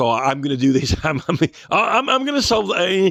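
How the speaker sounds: boastful, cocky bluster. Imitating Barrett boasting that he will fix things: imitating Barrett. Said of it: "he was like".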